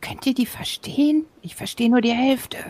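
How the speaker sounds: quiet whisper. Playing a character, speaking to the other characters; whispering to the others. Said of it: "Ich flüstere zu den anderen".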